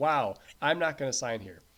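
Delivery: ordinary talk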